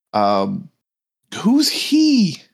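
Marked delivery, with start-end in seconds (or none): 1.4-2.4 high-pitched woman's voice. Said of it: "you hear a woman's voice".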